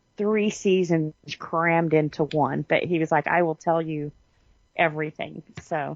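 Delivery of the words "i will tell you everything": ordinary talk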